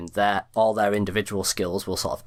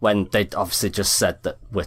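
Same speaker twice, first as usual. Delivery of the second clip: plain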